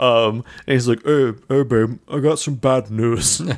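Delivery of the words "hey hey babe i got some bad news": put-on dopey, dingus-like voice. Voicing the husband who comes home early: imitating the husband's voice. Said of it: "I like his voice".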